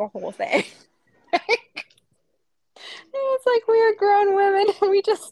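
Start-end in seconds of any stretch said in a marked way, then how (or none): 3.7-5.3 high, loud laughing in disbelief.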